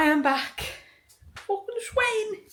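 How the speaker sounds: really terrible Scouse accent, pitched very high. Speaker greets the audience on coming back: really bad Scouse accent. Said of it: "I just did my really shit Scouse accent".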